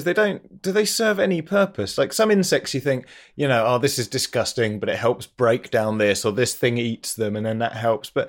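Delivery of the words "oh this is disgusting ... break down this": normal talking voice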